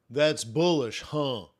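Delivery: put-on American accent. Practicing an accent for a quick joke: put-on American accent. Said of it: "I'm working on my American accent".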